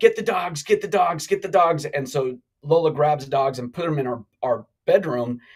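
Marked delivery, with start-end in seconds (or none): 0.0-1.8 urgent, insistent, repeated over and over. Telling how armed people stormed the house, repeating their orders: retelling shouted orders. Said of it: "they're like".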